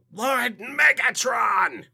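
shrill, very high, loud screech. Playfully hailing the other speaker as Megatron: Starscream voice. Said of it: "I'm gonna have to go Starscream on him".

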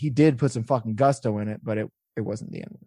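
ordinary delivery

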